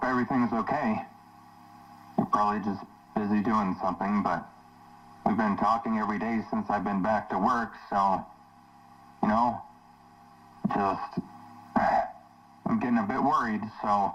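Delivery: high voice with panic creeping in. A man leaves a voicemail for someone he hasn't heard from: panicked.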